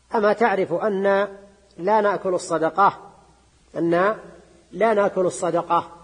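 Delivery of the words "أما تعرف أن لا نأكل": plain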